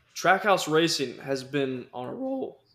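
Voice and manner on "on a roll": voice breaking and cracking through the line. Racing commentator comparing drivers and teams: voice cracking. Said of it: "my voice just cracked".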